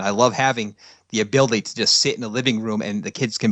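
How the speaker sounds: usual speaking voice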